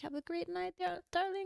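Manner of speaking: put-on soft, high, hushed voice, light Spanish accent. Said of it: "she had a little accent, and she was like".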